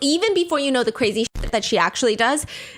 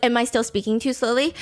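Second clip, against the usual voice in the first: usual speaking voice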